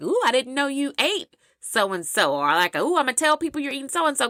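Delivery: mock sassy teasing tone. Retelling what people say on hearing what you eat: imitating a sassy remark. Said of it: "kinda sassy".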